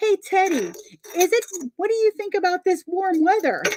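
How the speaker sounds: put-on squeaky, very high little child's voice. Describing a kid voice that talks to Teddy; imitating a kid voice. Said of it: "you'll hear this kid voice go".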